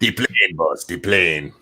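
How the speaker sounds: slight, light put-on Mexican accent. Showing how the most evil one talks, slight put-on Mexican accent. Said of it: "You become a little bit Mexican".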